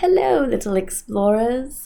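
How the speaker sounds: put-on British narrator accent. Describing a kids' show, the speaker imitates its narrator's British accent. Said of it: "the narrator has like a British accent".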